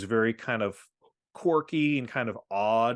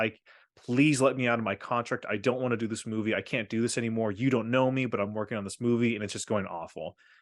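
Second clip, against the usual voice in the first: acted tearful begging tone. Retelling an actor's call to the studio chairman, imitating Rob Morrow crying. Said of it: "crying and saying".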